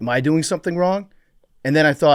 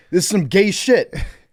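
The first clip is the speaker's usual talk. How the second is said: put-on yell, higher in pitch; 6 semitones higher than usual. Retelling how a stranger in a locker room yelled: imitating someone yelling. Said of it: "five seconds, ten seconds of him yelling".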